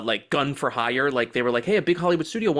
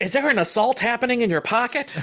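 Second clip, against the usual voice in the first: put-on high, startled, shocked old-lady voice; 9 semitones higher than usual. Acting out an old lady at a gas station hearing a loud phone ringtone: imitating a shocked old lady. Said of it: "the old lady behind you at the gas station is like".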